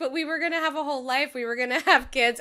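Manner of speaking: acted-out, high, weepy, tearful crying wail. Retelling a scene where a character starts crying: imitating someone crying. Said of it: "Henry starts crying and he's like".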